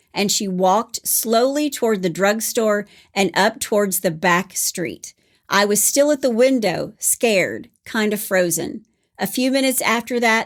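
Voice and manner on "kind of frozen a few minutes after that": ordinary talk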